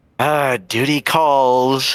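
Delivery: line carried by a sigh. Voicing a character who stands up to leave her companions: sighing. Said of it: "She kinda gives a sigh".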